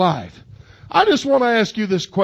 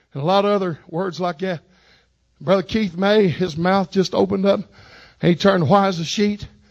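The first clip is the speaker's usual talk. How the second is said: ordinary talk, nothing marked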